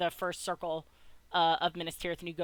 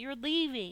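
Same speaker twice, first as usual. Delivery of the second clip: sniffling, much higher pitch; 6 semitones higher, 3 dB quieter than usual. Voicing a cornered girl who sniffles and looks at him: sniffling.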